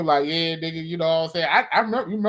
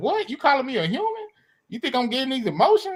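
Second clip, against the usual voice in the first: mock deeply insulted, offended, high-pitched, indignant; 8 semitones higher than usual. Retelling how an anime character reacted to being called human: imitating someone offended.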